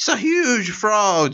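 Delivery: put-on yelling in very high, drawn-out voice. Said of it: "ele começa a gritar".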